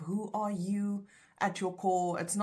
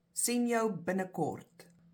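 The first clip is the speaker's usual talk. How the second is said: plain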